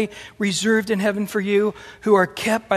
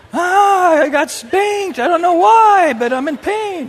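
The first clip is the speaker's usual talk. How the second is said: put-on very high, loud, drawn-out sobbing kid voice; 9 semitones higher, 7 dB louder than usual. Acting out a child who wakes up crying after a spanking: imitating a crying child. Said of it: "Your kid wakes up crying".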